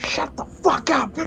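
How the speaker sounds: loud, conspicuous, obvious stage whisper. In a role-play scene, one character answers another: loud stage whisper. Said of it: "loudly and very conspicuously whispers".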